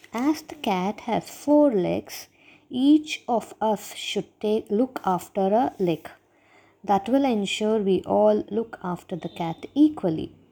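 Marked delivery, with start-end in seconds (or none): none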